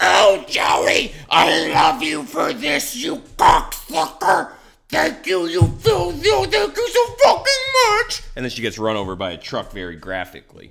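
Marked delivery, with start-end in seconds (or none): 0.0-8.2 shrill, creaky, rough scream pitched way up, rising. Acting out a comic character's lines while retelling the story: screaming in character. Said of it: "while I was screaming all of that".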